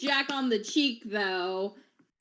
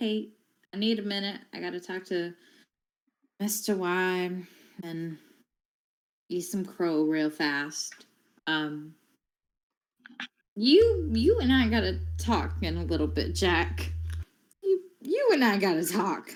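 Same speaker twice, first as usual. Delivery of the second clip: low, hushed stage whisper; 4 semitones lower than usual. A player's character takes another character's hand and half-whispers to him.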